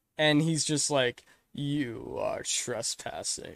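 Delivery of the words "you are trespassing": growly put-on gargoyle voice, quieter. Retelling a scene where a gargoyle catches an intruder: growly Goliath voice. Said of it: "in that growly Teeth David voice".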